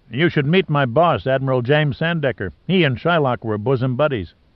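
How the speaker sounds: plain reading voice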